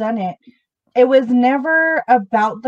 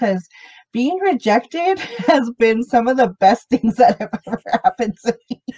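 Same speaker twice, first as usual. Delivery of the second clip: giggling, laughing through the words. Speaker apologizes for giggling mid-sentence and keeps going, laughing while talking. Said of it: "I'm laughing, I'm giggling".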